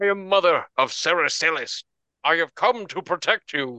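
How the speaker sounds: calling out like a dragon. Voicing a dragon that yells back from a distance: dragon yelling back. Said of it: "the dragon yells back and says".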